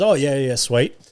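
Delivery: mock, breezy, ever so confident tone. Retelling a young employee's reply to a request for help: imitating a confident reply. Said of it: "Ever so confidently".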